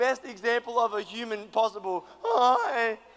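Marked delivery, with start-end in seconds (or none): 2.2-2.9 put-on loud teenage schoolboy voice. Retelling talking to a girl on the phone: imitating a year nine boy voice. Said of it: "no boys with that sort of voice?".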